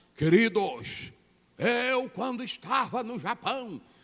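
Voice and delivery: affected, put-on sermon-style preaching voice. Retelling a brother's recorded message to the congregation, imitating the brother's changed voice. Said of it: "Que muda a voz".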